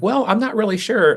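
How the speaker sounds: talking with voice pitched very high. Contrasting vocal tones that put people at ease, in a high-pitched voice. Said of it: "if I'm talking up here".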